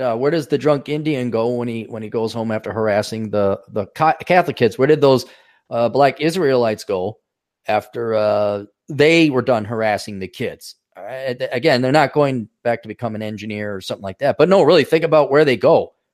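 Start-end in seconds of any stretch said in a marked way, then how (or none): none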